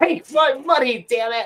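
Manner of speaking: cartoonish, very high-pitched voice. Attempting a Futurama line as an impression: Fry impression. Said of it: "I do a fry".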